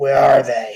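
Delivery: very loud, rough, harsh, gruff bark. A game master voices an armed rider stopping the players, in a gruff voice. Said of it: "in a gruff voice".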